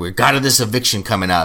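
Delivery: stern, serious tone. Retelling Julie announcing an eviction: imitating a stern announcement. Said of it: "she's so stern when she says it".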